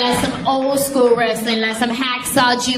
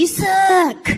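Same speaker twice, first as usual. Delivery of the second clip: high, mock kid yelling. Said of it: "so I yelled at him".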